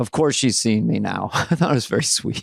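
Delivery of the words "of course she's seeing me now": acted-out muttering under the breath. Retelling what she said after coming in and looking around: imitating muttering under breath. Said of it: "kind of under her breath".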